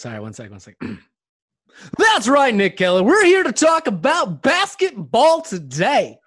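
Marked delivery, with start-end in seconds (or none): 2.0-6.1 put-on sports announcer voice, louder. Podcast co-host, asked for his sports announcer voice, opens the show. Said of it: "Your sports announcer voice".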